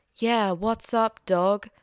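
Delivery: slow, mocking street-talk voice.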